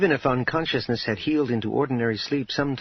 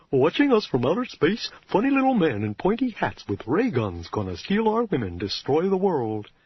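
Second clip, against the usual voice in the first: silly cartoon voice, pitch swooping up and down; 5 semitones higher than usual. Reading a scene where she mocks paranoia in a Goofy voice. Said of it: "She adopted a voice not dissimilar from that of Goofy".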